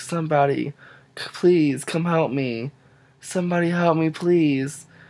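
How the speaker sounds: high, tearful, begging, acted cry through sobs. Recounting a nephew who is afraid of the dark, imitating him crying for help. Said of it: "my nephew was like crying, like bloody murder".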